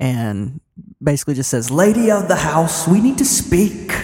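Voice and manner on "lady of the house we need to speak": booming, amplified, high-pitched calling voice. Calling out inside the house for its lady: magically amplified loud voice. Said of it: "uses thaumaturgy to make his voice louder".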